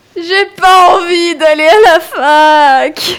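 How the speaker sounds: high, loud weeping through the words, fac stretched. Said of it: "elle aussi, elle pleure visiblement".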